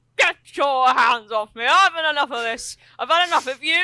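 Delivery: put-on leery drunk man voice. Voicing a blissfully drunk man who is pushing someone off: leery drunk man. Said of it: "suddenly gets a little bit leery".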